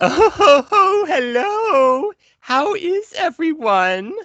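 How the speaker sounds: very high, loud, swooping cartoon voice, hello stretched. Asked to do the voices for the viewers at home: Pops voice. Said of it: "can you do the voice of Pops".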